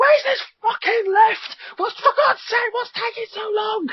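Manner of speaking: very high, shrill, frightened, panicked screaming. Retelling waiting for a lift in a scary game: retelling screaming in fear. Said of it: "all we're doing is literally screaming".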